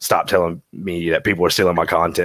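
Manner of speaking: normal talking voice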